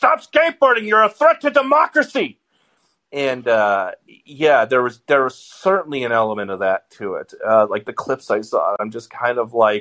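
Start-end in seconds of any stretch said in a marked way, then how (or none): 0.0-2.4 put-on old-man yell, much higher pitch. Speaker mocking an old guy yelling at a skateboarder, imitating an old man yelling. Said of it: "like yelling at the skateboarder".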